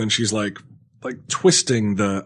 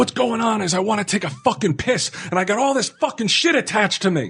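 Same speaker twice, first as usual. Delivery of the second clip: screaming, very high-pitched; 12 semitones higher than usual. Retelling answering an orderly in the hospital: imitating own screaming. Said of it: "I had no idea why I was screaming".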